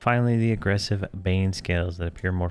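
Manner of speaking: plain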